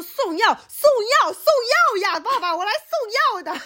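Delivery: mock yelling, very high and repeated. Retelling how she answered the father at the door: imitating own past shouting. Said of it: "我吼不过他".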